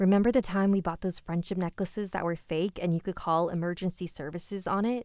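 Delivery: plain reading voice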